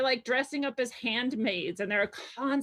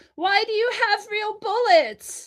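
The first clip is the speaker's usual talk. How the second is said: piercing, shrill, very loud, high scream; 10 semitones higher, 9 dB louder than usual. Retelling what the wife screamed at the officers: imitating someone screaming. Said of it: "screamed out".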